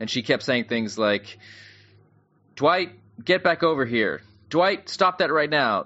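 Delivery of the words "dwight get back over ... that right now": high-pitched, mock angry scolding voice. Retelling a mother scolding her running toddler at the gate, imitating her angry tone. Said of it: "Like an angry tone".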